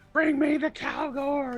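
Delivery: yelling at top of lungs. Narrating a scene: a familiar voice heard after an explosion in town, screaming. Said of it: "you hear this familiar voice screaming".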